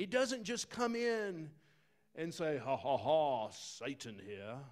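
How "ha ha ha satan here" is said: slow, drawled English accent. Acting out the devil announcing himself: Satan with English accent. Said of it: "He's got an English accent".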